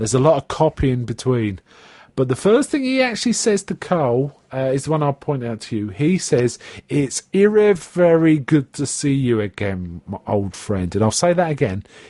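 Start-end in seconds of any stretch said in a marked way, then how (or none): 6.9-10.9 eerie, weird, low, very slow creepy crawl. Quoting a character's first line to another speaker: imitating a low, slow, weird voice. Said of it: "He's talking a couple of octaves lower".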